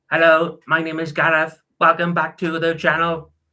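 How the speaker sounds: high, flat, stiff, robot-like voice. Imitating his embarrassing early channel intro, high-pitched robotic voice. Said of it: "I used to talk with this like high pitched voice and used to sound really robotic".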